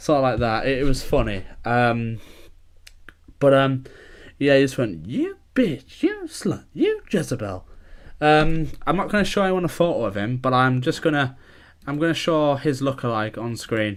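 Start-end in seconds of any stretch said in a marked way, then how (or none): 5.1-7.7 very high, squeaky cartoon voice, swooping high. Retelling what a friend said to his husband, in a Mickey Mouse style voice. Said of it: "like in the proper Mickey Mouse style voice".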